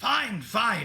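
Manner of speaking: through clenched teeth. Narrator gives a character's line as he hands over coins, through gritted teeth. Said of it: "he speaks through gritted teeth".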